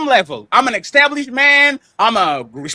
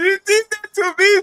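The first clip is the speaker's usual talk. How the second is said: fake sobbing, higher; 6 semitones higher than usual. Acting out a hypothetical whining complaint to Sharon: mock crying. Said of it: "Are you really crying?".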